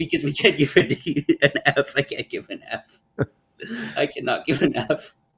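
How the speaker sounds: talking through laughter. Grading a hockey player's season on video, the speaker keeps talking while laughing. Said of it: "I'm laughing just because".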